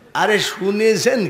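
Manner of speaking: ordinary talk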